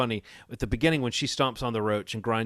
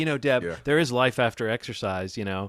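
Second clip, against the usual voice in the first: normal talking voice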